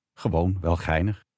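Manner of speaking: ordinary talk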